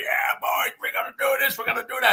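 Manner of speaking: put-on high Southern accent. As the legendary coach talking to his players, do a Southern Lamar Leachman impression. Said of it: "he's a Southern guy down there".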